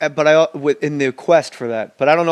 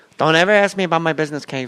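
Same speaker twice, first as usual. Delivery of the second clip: very high, small, thin little voice; 3 semitones higher than usual. Quoting Michael Corleone from the Godfather films: imitating Michael Corleone in a very high voice. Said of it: "Very high voice".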